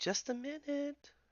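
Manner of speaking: very high-pitched, hushed, soft elf voice. Narrating to players, voicing someone behind the door, in an elven voice. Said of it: "a an elven voice say".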